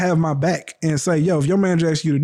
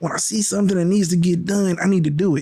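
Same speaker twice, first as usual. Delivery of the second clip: mock boohoo crying, sobbing. Retelling what a woman said while she was crying, imitating her boohoo crying. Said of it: "Like literally boohoo crying".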